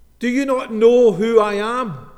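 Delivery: very loud, pompous, puffed-up indignation. A passenger who pushed to the front of the queue addresses the check-in lady, loud and pompous. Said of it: "in a loud, pompous voice".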